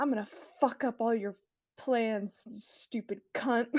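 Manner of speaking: spoken through clenched jaw and gritted teeth. In a role-play game, a character threatens Lydia: through gritted teeth. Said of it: "looks at Lydia just with like gritted teeth".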